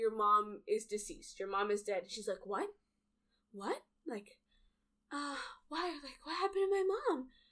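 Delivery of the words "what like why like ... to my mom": put-on childlike voice, much higher. Describing a girl told her mom is dead, imitating her little-kid voice. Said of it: "she has like a very little kid voice".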